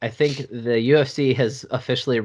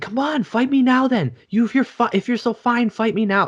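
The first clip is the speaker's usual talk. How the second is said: very high-pitched, taunting yelling and screaming; 13 semitones higher, 3 dB louder than usual. Retelling how a fighter screamed at an opponent in a hotel: imitating Marvin Vettori screaming. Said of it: "He's just screaming at him".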